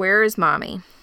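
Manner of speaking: usual speaking voice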